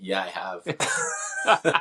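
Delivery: speech through put-on laughter. Retelling answering young training partners while pinning them: imitating own laughing reply. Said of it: "I was laughing as I'm pinning them".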